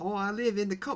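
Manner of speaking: bad fake Australian accent, pitched very high. Playing a local answering where they live, in a bad Australian accent. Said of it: "that is such a bad accent".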